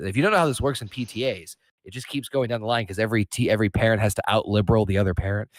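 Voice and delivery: ordinary talk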